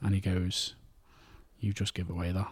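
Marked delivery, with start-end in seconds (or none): 1.6-2.5 mock deadly serious voice. Retelling a film scene, quoting Johnny Depp's character: dead serious. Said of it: "dead serious".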